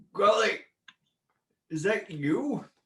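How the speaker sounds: put-on elderly dwarvish voice. Narrating a scene, a voice from the other room calls out in an old dwarvish voice. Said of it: "you hear this old dwarvish voice just go".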